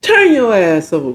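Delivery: plain, straight menacing, threatening tone. Correcting the retelling to how the line was really said. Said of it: "That's more like what he said".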